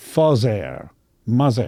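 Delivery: put-on French accent, TH pronounced as Z. Explaining the English TH sound, showing how the French say it, French accent, no TH. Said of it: "the French will always say".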